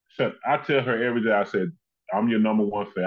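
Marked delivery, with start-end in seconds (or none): none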